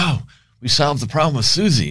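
put-on excited, high, bursting with excitement. Retelling the ranch owner's announcement at breakfast, mock-excited. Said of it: "He's all excited".

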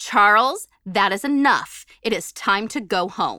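firm, no-nonsense mom voice. Retelling how she finally had enough and spoke in her best mom voice, firm. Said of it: "mustered up my best mom voice, and firmly said".

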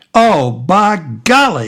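big, loud, bellowed outburst. Reading a story aloud: a friend discovered behind them, bellowing. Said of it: "he bellows".

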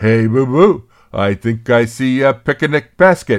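loud cartoon bear character voice. Speaker showing off a favourite impersonation: Yogi Bear impression. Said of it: "I do a very good Yogi Bear impersonation".

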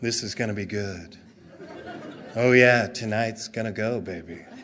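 very deep, soft, silky ad announcer voice. Describing an ad, quoting the announcer's line, in a smooth announcer voice. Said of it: "the announcer's voice comes out and goes".

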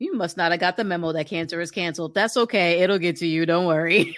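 normal talking voice

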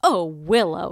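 disgusted tone. Playing Sheila reacting to hearing about dating a musician: disgusted. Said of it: "because she's like disgusted".

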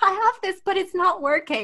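high, put-on girlish little voice. Recounting what they said to the guy at the repair place, in a little girl voice. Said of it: "little girl voice".

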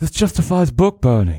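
put-on generic British accent. Asked to do Gordon Ramsay's voice for someone's comment, give a failed Gordon Ramsay impression, generic British guy. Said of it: "I guess that was a generic British guy".

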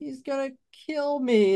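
crying words in a very high, tearful voice. Retelling a Chucky movie scene, imitating Andy crying. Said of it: "starts crying".

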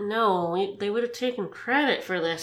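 very low, soft muttering under the breath. Retelling a character thinking aloud, not expecting to be overheard: muttering to himself out loud. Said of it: "pondering to himself out loud here".

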